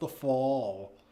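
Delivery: soft, low, bad American accent, drawn-out fall. Wondering whether Americans say autumn or fall, trying a bad American accent. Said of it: "That's the worst American accent ever".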